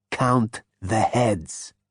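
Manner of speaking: low, raspy delivery. Reading a story aloud, a character claims his identity: low rasp. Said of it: "said Zaphod in a low rasp".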